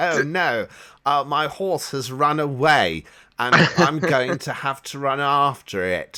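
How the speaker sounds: very loud, slow, drawn-out bad fake English accent. Mocking American cartoon characters voiced by Americans, in a really bad English accent. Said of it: "really bad English accents".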